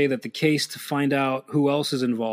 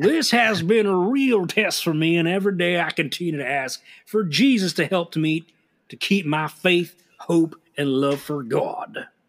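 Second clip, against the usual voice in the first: put-on southern accent; 4 semitones higher than usual. Asked to do the voice from one of the letters, the speaker does Sheila's southern voice. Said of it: "Sheila's a southern".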